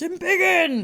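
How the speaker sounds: high-pitched, yelled battle cry.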